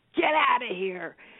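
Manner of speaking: thunderous, booming man's roar. Retelling a frightening event, imitating a thunderous man's voice. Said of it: "this thunderous voice of this man".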